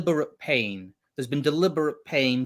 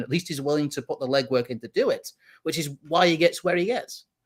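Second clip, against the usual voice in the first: ordinary talk, nothing marked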